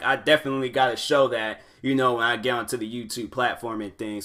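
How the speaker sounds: ordinary delivery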